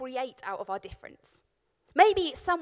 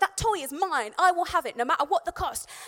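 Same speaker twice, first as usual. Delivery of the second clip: really angry, aggressive, combative snarl like an angry dog; 4 semitones higher than usual. Voicing a dog fighting over a toy: voicing an angry aggressive dog. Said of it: "He gets proper aggressive. He gets really angry".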